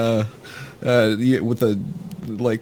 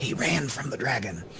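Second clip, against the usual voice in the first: very quiet, hushed half-whisper; 9 dB quieter than usual. Leaning in to tell a character something in secret: half-whispering. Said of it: "I'll lean in and whisper to him".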